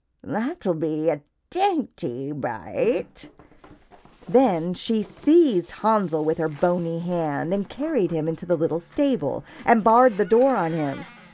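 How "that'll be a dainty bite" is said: muttering, murmuring, lower and much slower. Narrator reads her line as she watches the sleeping children, muttering to herself. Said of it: "she muttered to herself".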